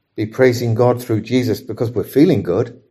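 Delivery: normal talking voice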